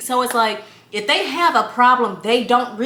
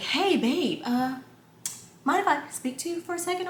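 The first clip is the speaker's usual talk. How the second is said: very proper, polished, careful speech; 4 semitones higher, 9 dB quieter than usual. Retelling how Justin raises a problem: imitating Justin talking proper. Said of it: "he talks really proper, y'all, so that's why I'm talking like that".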